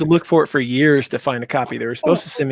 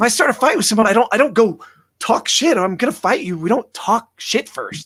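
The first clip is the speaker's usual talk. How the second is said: high, incredulous pushback. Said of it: "And I'm like".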